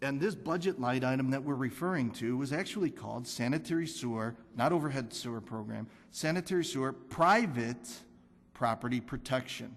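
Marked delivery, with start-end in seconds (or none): 6.1-7.9 the word private stressed higher and louder. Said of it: "I emphasize the word private".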